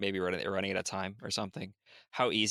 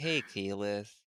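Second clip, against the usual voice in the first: put-on chill, laid-back hippie dude voice. Retelling how the Sun Tree spoke in the show: super chill hippie dude voice. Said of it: "just a super chill, like, hippie dude".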